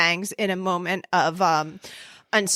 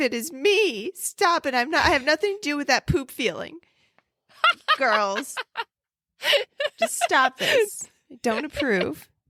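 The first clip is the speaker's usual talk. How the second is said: put-on swooping, disapproving granny voice; 7 semitones higher than usual. Speaking as grandma to the girls, in a grandma voice. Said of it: "That's a good grandma voice".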